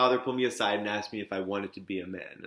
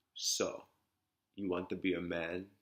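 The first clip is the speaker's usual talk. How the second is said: put-on strong old-country, off-the-boat Italian accent; 7 dB quieter than usual. Retelling what the father said on the back porch: imitating father's Italian accent. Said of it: "my father had this off-the-boat Italian accent".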